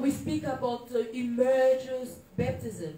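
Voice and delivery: slow, careful, clear explaining manner. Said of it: "I'm going to speak slowly so that we understand".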